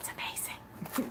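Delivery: soft, voiceless whisper. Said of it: "Did I say amazing?".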